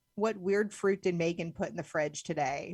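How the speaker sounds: usual speaking voice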